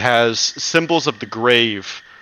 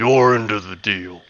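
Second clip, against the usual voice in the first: low, gruff, rough-edged voice; 3 semitones lower than usual. Narrating to players, voicing the creature that throws the sack, low gruff voice. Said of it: "a low, gruff voice speak to you directly".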